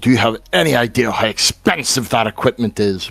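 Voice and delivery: very loud, furious angry voice. Recapping a scene where she retorts after he throws the equipment, mock-angry retort. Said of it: "rather angrily going to retort to him".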